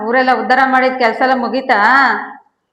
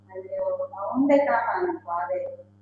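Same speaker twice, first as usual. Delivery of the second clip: soft, sad, lamenting tone. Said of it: "ಯಾಕೆ ಬೇಜಾರಿಂದ ಮಾತಾಡ್ತಾ ಇದ್ದೀರಾ".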